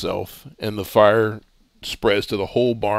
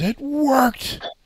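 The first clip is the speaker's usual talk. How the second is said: piercing, shrill, very high-pitched scream. Game narrator voices a character standing back up, screaming. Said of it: "he screams".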